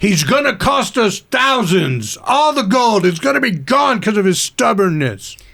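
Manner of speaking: projected, carrying voice, complaining tone. Arguing in character toward the camp, turned away: projecting voice loudly. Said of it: "so that my voice will project more that way".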